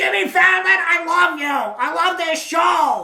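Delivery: loud rambunctious put-on voice. Imitating the comedian on a talk show: Gilbert Gottfried loud voice. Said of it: "he would be like".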